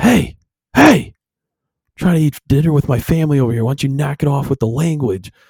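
mock angry snap. Retelling a restaurant story about a swearing diner, imitating dad snapping. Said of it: "my dad finally snaps and goes".

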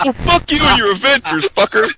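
very high, squeaky, squeaked-out outburst. Mocking a friend's reaction to a review: imitating Chris. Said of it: "He's like".

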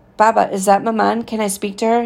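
ordinary delivery

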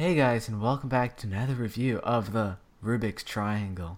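low, quiet, even monotone drone. Imitating a YouTuber's review intro to friends, in a monotone JR Cuber impression. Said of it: "So monotone".

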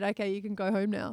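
ordinary delivery

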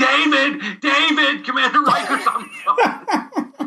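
excited, loud shouting.

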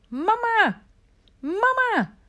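very high, full-volume shout at full strength. Remi leans forward and calls to his mother; shouting as loud as possible. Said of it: "riep zo hard hij kon".

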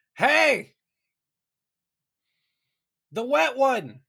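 yelled very high and very loud. Calling out in character to a distant figure on the water: shouting in character. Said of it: "Grat's just gonna shout".

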